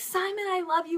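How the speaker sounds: excited, high, eager call with put-on screaming. Retelling screaming to a performer at a concert: imitating own screaming. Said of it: "So I was screaming".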